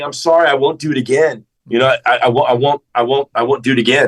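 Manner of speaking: imitated crying, tearful tone. Retelling how a dad apologized while crying: imitating someone crying. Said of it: "and he's crying, saying".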